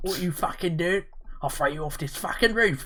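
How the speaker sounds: put-on London Cockney accent. Imitating a man in a clip, in a put-on Cockney accent. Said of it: "what sort of a Cockney accent".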